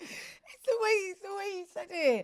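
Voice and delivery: very loud, very high, giggling while talking. Answering why they are laughing at the way something was said: laughing while talking. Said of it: "Not you laughing".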